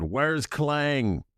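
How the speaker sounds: high, sudden, loud shout. In a role-play scene, a character immediately calls for someone, shouting. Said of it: "I immediately shout out".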